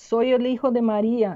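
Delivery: plain reading voice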